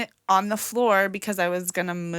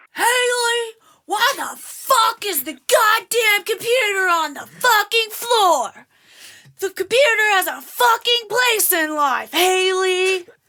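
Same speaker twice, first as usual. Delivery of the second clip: put-on very high, enraged, furious yelling tirade; 8 dB louder than usual. Retelling her father's outburst on finding the computer on the floor: imitating her dad's angry yelling. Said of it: "I'm gonna do this in my dad's voice too".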